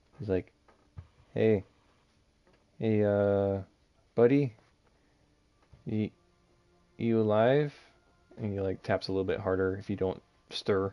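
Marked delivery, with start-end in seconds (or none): 1.4-7.8 slow, halting, concerned, worried prodding voice. Voicing a worried Cartwright tapping a sleeper on the shoulder: worried. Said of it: "he looks a little worried".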